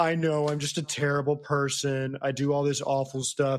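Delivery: put-on woe-is-me self-pity. Mocking how an upset-at friend plays the victim, mock woe-is-me self-pity. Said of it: "Dobby tries to do the woe is me thing".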